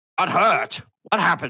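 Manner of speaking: sudden, high, alarmed, startled shout. Voicing a character reacting to news that people got hurt: in-character shouting. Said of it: "I didn't mean to sound like I was shouting".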